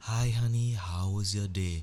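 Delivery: pleasant low voice, drawn out and unhurried. Imagining a robot greeting you when you come home, in a nice low voice, talking slowly. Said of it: "with a nice low voice, talking slowly".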